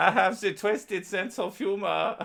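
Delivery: put-on German accent, pitched very high. Retelling what a man told the speaker, in a german voice. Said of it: "This is my German voice".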